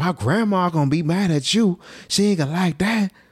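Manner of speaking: very high-pitched put-on Florida accent. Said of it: "that Floridian accent".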